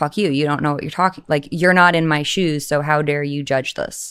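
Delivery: defensive, snappy comeback tone. Recalling answering people who judged leaving something successful, retelling a defensive retort. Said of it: "I was very, very defensive".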